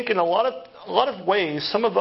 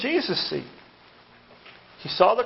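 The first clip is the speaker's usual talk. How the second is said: normal talking voice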